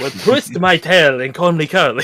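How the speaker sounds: put-on old-fashioned Victorian period accent. Friends trying out accents together, one tries again, Victorian-sounding accent. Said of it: "Now you sound Victorian".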